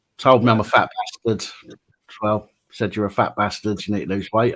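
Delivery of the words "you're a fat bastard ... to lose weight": ordinary delivery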